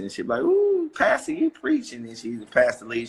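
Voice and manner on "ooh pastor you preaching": put-on very high, sing-song, swooping old-lady voice. Retelling a church joke, imitating Mother Jenkins in an old lady voice. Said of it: "I would do it like an old lady voice".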